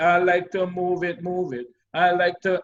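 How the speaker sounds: ordinary talk, nothing marked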